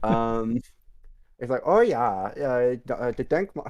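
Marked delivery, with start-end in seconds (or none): 1.6-3.7 slow, terrible put-on German accent. Acting out what she says to you, in a terrible German accent. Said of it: "I will just do it in a terrible accent".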